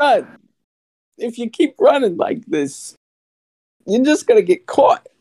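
loud, very high, pitched way up. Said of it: "That's good".

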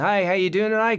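put-on breezy Australian accent. Retelling walking in and greeting someone, in an australian accent. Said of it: "I'm doing the Australian thing".

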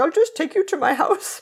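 put-on British accent. Retelling what a policeman said when driving the children away: british accent. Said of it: "I'm sure he had a British accent".

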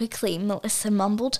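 ordinary delivery

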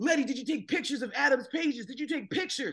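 put-on yelling. Telling a story about a man who runs to the basement, retelling his yell. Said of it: "he starts yelling".

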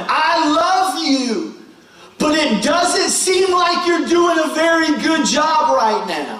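acted-out scream. Recalling banging on the steering wheel: retelling screaming at God. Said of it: "I'm screaming at God going".

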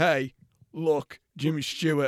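put-on swaggering, cocky man voice. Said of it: "swags up and goes like".

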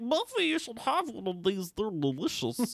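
high voice, talking through a full mouth. Retelling a dessert scene, voicing a character offering cookies, faking a mouthful of cookies. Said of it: "I was trying to sound like I had a mouthful of cookies".

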